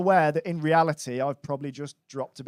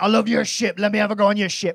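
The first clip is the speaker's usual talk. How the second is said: put-on pirate-style voice; 4 semitones higher, 4 dB louder than usual. Retelling what a man calling himself a pirate said to you, imitating Captain Crack Sparrow. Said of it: "he was convinced he was a pirate".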